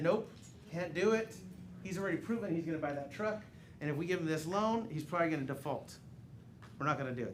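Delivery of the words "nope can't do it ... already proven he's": plain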